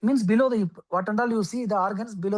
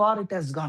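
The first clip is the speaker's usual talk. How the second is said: normal talking voice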